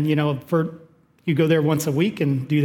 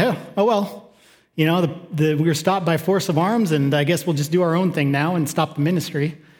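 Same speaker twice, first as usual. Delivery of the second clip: ordinary talk, nothing marked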